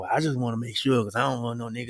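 low, muttered half-whisper under the breath. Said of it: "he kinda whispered under his breath saying".

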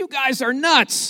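high-pitched, slow, drawn-out yell.

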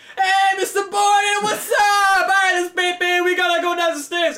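shrill, booming, very loud, high-pitched yell. Retelling how a teacher greeted another teacher: imitating a loud teacher. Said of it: "he was so loud".

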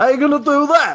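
put-on loud New York accent, pitched very high. Retelling a film detective's line: Sylvester Stallone voice. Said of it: "sounds just like Sylvester Stallone".

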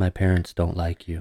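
toneless, flat, low, very quiet hushed monotone murmur. Reading a story aloud, voicing his reply to the narrator: flat, void of inflection. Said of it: "In a voice flat, void of inflection".

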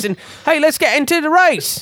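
high-pitched put-on English accent. Telling friends about a racing game set in england, doing a mock english accent. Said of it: "now I know you're doing an accent".

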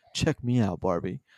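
low, understated, underplayed boastful tone. Retelling a movie moment where Ken calls to Barbie, understated Ken impression. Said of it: "like his very understated".

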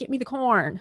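put-on old-time Chicago accent. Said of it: "my accent itself, it just fluctuates".

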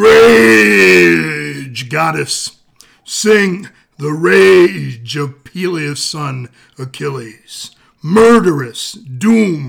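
very loud, booming, slow, drawn-out wrestling announcer voice. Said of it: "say it like a wrestler".

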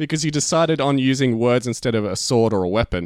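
plain

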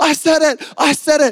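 put-on fired-up excitement. Retelling turning to someone in class during a fire alarm, retelling being fired up. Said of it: "I'm fired up".

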